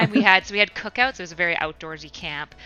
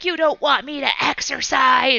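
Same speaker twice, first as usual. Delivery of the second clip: high, put-on, furious, angry shouting scream; 7 semitones higher, 4 dB louder than usual. Retelling a story about a kid kicking another, the speaker acts out his screaming. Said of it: "he was like screaming like".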